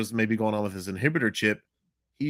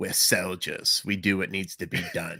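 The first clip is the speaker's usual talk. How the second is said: slow, drawn-out, evil, menacing villain voice; 3 semitones lower than usual. Reading a dialogue between Cody and Crosshair, giving Crosshair's reply in an evil Crosshair voice. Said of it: "I just want to do a little evil Crosshair voice".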